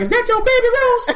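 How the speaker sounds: pimp voice pitched very high. Retell how he asked you about the baby, in a pimp voice. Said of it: "He did it like a pimp voice".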